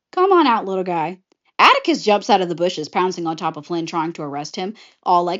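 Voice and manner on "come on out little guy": smug, self-satisfied tone. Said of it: "Flynn, acting all smug".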